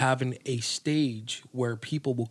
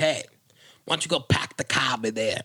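attempted Boston accent. Trying a Boston accent after being asked to: attempted Boston accent. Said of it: "that doesn't sound from Boston".

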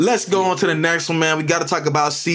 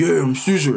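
imitated, forced, overdone voice pushed way down low. Calling someone's voice disgusting, the speaker imitates him: mocking exaggerated deep voice. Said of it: "it just like he was pursing his lips".

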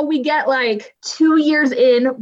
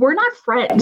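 ordinary talk, nothing marked

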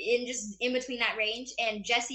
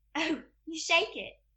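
British accent with pitch lifted up; 6 semitones higher than usual. Showing off a favorite Narnia mimicry: Lucy Pevensie voice. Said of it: "So I'm Lucy Pevensey".

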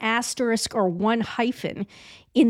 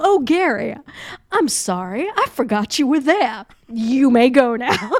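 drawl from Savannah; 6 dB louder than usual. Imagining meeting someone and addressing him: deep Savannah drawl. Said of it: "in a savannah drawl".

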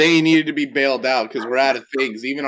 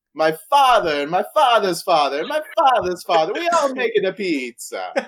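over-the-top, sing-song, exaggerated put-on Italian accent; 8 semitones higher than usual. Describing the pizzeria owner from its ad, imitating Ben Danucci's Italian accent. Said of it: "Why does he sound like so weird?".

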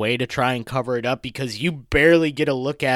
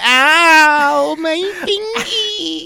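very high, strange alien voice, "ow" drawn out; 7 dB louder than usual. Asking Brandon about a movie scene, acting out the alien in an alien voice. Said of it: "the alien goes".

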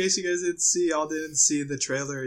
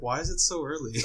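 plain

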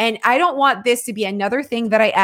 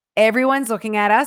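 normal talking voice

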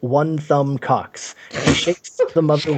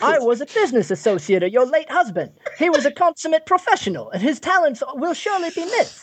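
very high, put-on stage Cockney accent; 11 semitones higher than usual. Playing a business associate offering condolences to a grieving mother: Bert in Mary Poppins voice. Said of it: "Do it Bert in Mary Poppins".

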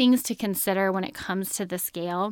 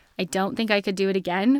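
plain

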